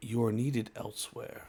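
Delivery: wise, ominous, foreboding, rushed delivery. The game master voices a summoning call to a player: wise yet ominous voice. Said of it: "a wise yet ominous voice saying".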